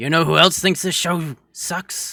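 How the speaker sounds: very loud, gruff, big bellowing voice. Co-hosts trying out voices for a line about the show, in a gruff Goldar voice. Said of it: "It's that gruff".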